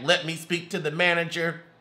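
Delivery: ordinary delivery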